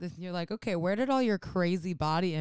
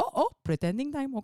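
put-on old man voice, higher; 7 semitones higher than usual. Retelling how an elder announced pretending time: imitating grandfather's voice. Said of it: "I hear it in my grandfather's voice".

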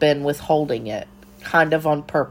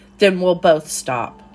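sharp, curt, cutting tone; 2 semitones higher than usual. An aunt cuts off another aunt's protest at the kitchen table, sharply. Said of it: "Aunt Vera said sharply".

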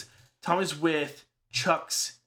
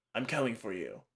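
somewhat gravelly, very low and hushed voice; 7 semitones lower, 8 dB quieter than usual. Imitating how a character talked, the speaker uses a kinda gravelly voice. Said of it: "kinda gravelly because I can't quite get there".

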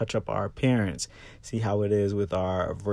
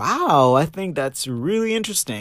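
lively interested tone, high and raised; 6 semitones higher, 7 dB louder than usual. Showing how to add tone when interested in something, interested tone. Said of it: "if we're interested in something, we can add a tone like".

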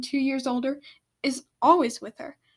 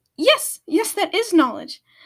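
eager, swooping, excited, high and loud; 7 semitones higher, 8 dB louder than usual. Narrating a dragon answering another who asks about Knowledge, excited. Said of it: "said more excitedly than most dragons".

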